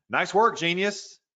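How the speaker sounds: snide, sarcastic, high-pitched tone. Showing an example of sarcasm toward a team member: sarcastic.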